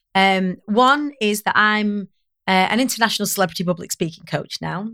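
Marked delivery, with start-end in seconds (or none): 2.7-4.9 hurried, rushed, rattled-off delivery. Introducing one's own job title, said really quickly. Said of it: "I have to say it really quick".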